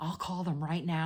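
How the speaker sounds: mock flustered, high-pitched, frantic flipping-out outburst. Retelling the mother flipping out: imitating mom flipping out. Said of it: "flipping out".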